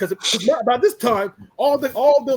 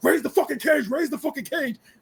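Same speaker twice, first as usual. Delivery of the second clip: put-on scream, higher pitched; 4 semitones higher, 4 dB quieter than usual. Retelling what someone shouted outside the cage: imitating someone screaming. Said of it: "Samoa Joe is literally screaming".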